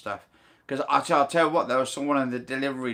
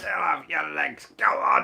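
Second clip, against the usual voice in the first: rough, swooping, barking drill-sergeant voice; 3 semitones higher than usual. Speaker tells the others how he'll make her walk six miles: like a drill sergeant. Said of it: "I'm going to be like a drill sergeant".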